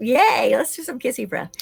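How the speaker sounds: put-on eager, gleeful, excited little-kid cheering. Retelling how children react to kissy breath: imitating excited children. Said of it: "And they love it".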